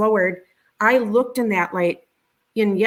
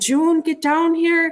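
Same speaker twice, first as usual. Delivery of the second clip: put-on screaming, high and drawn out; 8 semitones higher than usual. Retelling someone downstairs calling for the mother to come: imitating someone screaming. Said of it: "And he's yelling".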